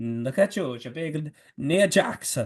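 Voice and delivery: put-on Italian accent. Retelling how he kept calling her Nia Jackson, in a put-on Italian accent. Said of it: "in that Italian accent".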